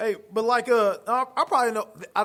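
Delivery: high stammering voice. Podcast hosts chatting, the speaker stumbles while explaining something: stuttering. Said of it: "I'm stuttering".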